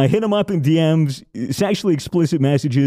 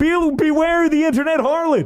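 put-on old preacher voice, higher; 12 semitones higher than usual. Imitating a sixty-year-old man preaching to old people in churches: imitating a sixty-year-old church preacher. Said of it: "a sixty-year-old man just sitting in front of his stage in a, in a, in a bunch of churches".

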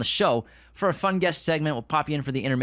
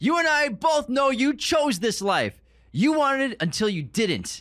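screaming at a very high pitch; 12 semitones higher than usual. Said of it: "Are they, like, screaming?".

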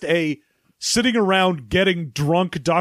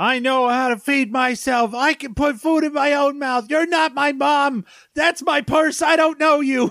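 acted-out, high, furious shrieking voice; 8 semitones higher than usual. Describing Saloma trying to feed Sammy, imitating Sammy's mock angry shriek. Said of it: "hear a man angrily shriek".

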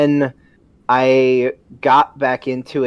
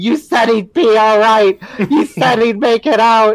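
put-on, shrill, very high, loud accusing scream; 9 semitones higher, 5 dB louder than usual. Retelling a game moment about the Ankylosaurus: imitating someone screaming. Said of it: "and just screaming".

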